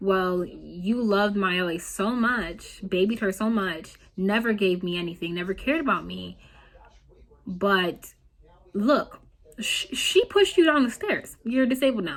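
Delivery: ordinary talk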